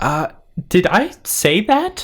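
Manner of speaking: nervous, anxious, high, drawn-out hesitation. Voicing a character caught saying something wrong: nervous. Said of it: "Savannah starts sweating nervously".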